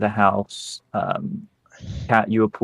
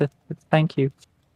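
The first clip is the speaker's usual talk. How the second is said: pitched-up stammer, tripping on "th-" of "thank"; 6 semitones higher than usual. Game master voices a subordinate's reply to his superior, stuttering. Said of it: "but he stutters".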